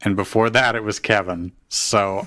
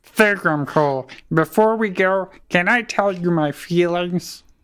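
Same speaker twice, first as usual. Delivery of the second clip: cartoon alien voice, higher pitch; 9 semitones higher than usual. Voicing a character for the others, Marvin the Martian-like voice. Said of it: "now I hear Marvin the Martian".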